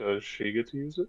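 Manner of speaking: soft, hushed, quiet aside. A player's character leans in and speaks to another character, quiet. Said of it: "like quietly to Spears goes".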